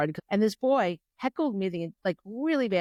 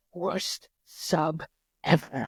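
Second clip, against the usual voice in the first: barely voiced, muttered whisper under the breath; 3 semitones lower than usual. Retelling what a student said about the substitute: imitating a whisper under breath. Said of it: "he kinda whispers it under his breath".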